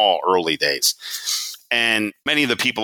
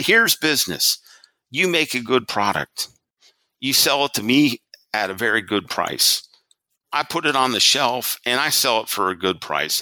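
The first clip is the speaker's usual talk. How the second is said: put-on Southern American accent; 5 semitones higher than usual. Retelling what a man said to them about p&g, in a southern accent. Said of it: "he's like in his Southern accent".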